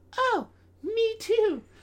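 very high-pitched put-on girly voice. Talking about Valentine's Day plans, a speaker acts out a girl's reply in a girl voice. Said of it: "that's my girl voice".

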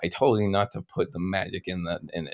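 hushed, quiet, seething angry scolding. Retelling how an angry Keegan scolds, imitating Keegan's quiet angry voice. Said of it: "he's saying it quiet still because he's, he's not yelling".

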